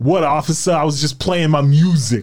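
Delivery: clumsy, shaky, bad put-on Boston accent. Telling about a kid from Boston pulled over by police, quoting him, in bad Boston accent. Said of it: "I don't know how to do a Boston accent".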